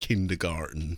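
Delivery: bad, put-on American accent. Imitating how Yanks would say the word, in a bad American accent. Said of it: "that was not a very good American accent".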